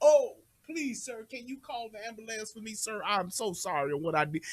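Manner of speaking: mock courteous, sorry-sounding begging tone. Acting out a man who was just shot: imitating someone pleading politely. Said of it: "they become the most polite".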